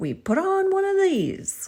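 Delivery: squeaky, silly, very high, loud comical voice. Retelling how he pulled out a smiley-face bouncy ball and made you laugh, in a put-on comical voice. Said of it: "in a comical voice he said".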